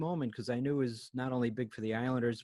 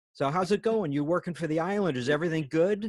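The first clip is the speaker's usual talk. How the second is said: really loud, high, friendly voice; 5 semitones higher, 7 dB louder than usual. Retelling what a man from Sports Illustrated said to him, really loud voice. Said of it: "he says in a really loud voice".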